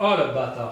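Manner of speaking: loud, angry, frustrated, worked-up outburst. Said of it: "Je m'énerve".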